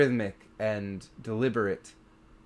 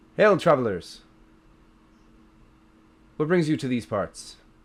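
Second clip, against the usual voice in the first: loud call carrying across a distance; 3 semitones higher, 5 dB louder than usual. Voicing a rider who hails travelers approaching their cart: calling out to travelers. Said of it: "you hear the voice call out".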